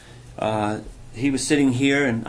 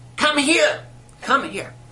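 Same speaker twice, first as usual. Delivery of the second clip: put-on squeaky voice, much higher pitch; 13 semitones higher than usual. Recalling a revered man calling him over to pray for him; imitating his squeaky voice. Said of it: "he just said in his squeaky voice".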